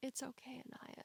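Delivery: soft, near-whispered, comforting, under the breath.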